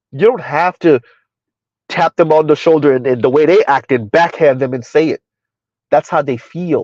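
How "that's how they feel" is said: feel stressed, slow and drawn out. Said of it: "emphasis on the word feel".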